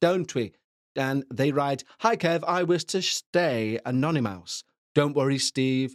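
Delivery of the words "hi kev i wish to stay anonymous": ordinary delivery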